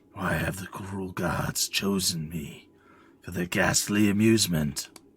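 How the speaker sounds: slow, throaty, uneasy, guttural voice. A narrator voicing a pitiful humanoid creature talking with itself, uneasy and guttural. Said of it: "talking with itself in an uneasy, guttural tone".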